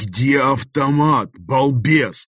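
sharp hiss, very close in. Reading a story where a man pulls the narrator aside, hissing into his ear. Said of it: "Прошипел он мне на ухо".

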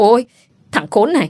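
sudden pained cry and cursing. A man whose arm is twisted behind his back curses his attacker, crying out in pain. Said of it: "đau quá nên la lên rồi chửi".

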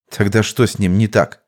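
ordinary delivery

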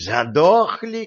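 outraged, affronted, indignant, high pitch. Retorting to a companion's scornful remark, indignant. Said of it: "возмутился Кощей".

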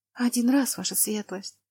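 whispering in a trembling, shaky voice. A girl answers his grace's question about her dagger: trembling whisper. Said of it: "прошептала дрожащим голосом девушка".

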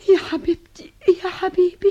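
crying through laughter. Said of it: "أنت ليه بتبكي تملي؟".

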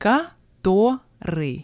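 Который drawn out slowly.

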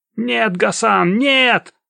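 shrill, high-pitched, thin-voiced squeal. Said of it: "тонким голосом заверещал Абдулла".

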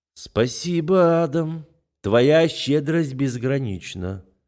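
forced out between clenched teeth. [name] answers Adam, speaking through gritted teeth. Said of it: "сквозь зубы цедит Али".

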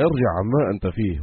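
ordinary talk

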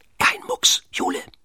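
hushed, barely voiced whisper. Pitt, creeping up on the tied-up jule, whispers to her. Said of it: "flüsterte er".

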